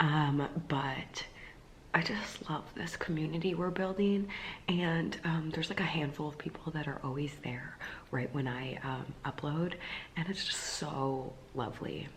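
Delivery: soft, hushed, quiet whisper. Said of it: "I'm talking quietly 'cause Joff's sleeping".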